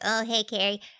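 put-on childlike, young-sounding voice. Imitating a speaker who drank from a plastic bottle: Kimberly Meredith voice. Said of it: "is channeling Kimberly".

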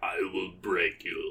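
very low, very quiet, deep Russian villain voice. Describing a wished-for cartoon supervillain, acting it out: giant russian villain voice. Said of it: "the giant Russian, like".

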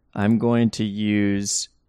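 plain reading voice

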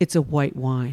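low, dry, matter-of-fact deadpan. Retelling what the waiter said about the wine: imitating a straight-faced reply. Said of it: "he looks at me with a straight face and he says".

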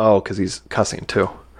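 ordinary talk

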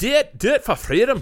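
put-on very high, loud, drawn-out Scottish-accented yell. Showing what to tell people for fun: Scottish accent. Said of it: "my favorite thing in Scottish".

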